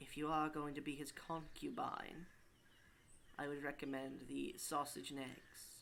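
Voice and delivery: slow, hushed, confiding half-whisper. A game narrator voicing a woman who leans down to the player: half-whispering in your ear. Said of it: "and she starts whispering in your ear".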